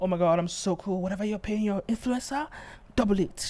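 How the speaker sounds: mocking, smug, self-satisfied boastful tone. Mocking the woman in the clip by imitating her boast: mocking imitation of a smug boast. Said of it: "she thinks she's so".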